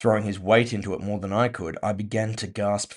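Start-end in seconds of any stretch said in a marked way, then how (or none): none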